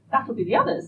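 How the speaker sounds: cheerful, bright tone. As voices approach the cottage, Alice speaks up: bright. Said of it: "Alice said brightly".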